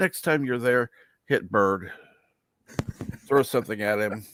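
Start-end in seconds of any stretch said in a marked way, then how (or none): none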